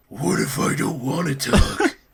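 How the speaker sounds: words growled out. Voicing a character refusing to talk: growling. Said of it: "He growled out".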